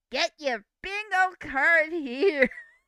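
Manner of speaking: very overdone fake American accent, loud. Retelling an embarrassing moment, in a very fake Americanized accent. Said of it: "very very fake Americanized accent".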